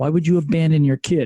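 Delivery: low, scornful, indignant scolding voice. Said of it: "I know you're saying".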